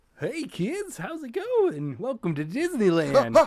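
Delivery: high, sing-song, fun and cheerful. Playing a park attendant greeting arriving park goers: fun theme park attendant. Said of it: "the fun attendant or whatever".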